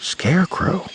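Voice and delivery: hushed, murmured word. Eli reacts to a suit found near a crash site, murmured. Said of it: "Eli murmured".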